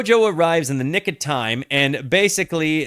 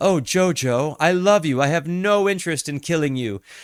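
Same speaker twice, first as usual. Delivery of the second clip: falsely sentimental good-guy voice, hollow put-on affection. Retelling a scene where Dio acts sentimental: imitating Dio acting sentimental. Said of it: "always playing the good person in his voice".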